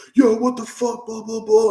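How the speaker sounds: mock high-pitched yelling. Retelling how a stall worker came back, imitating someone yelling. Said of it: "he starts yelling".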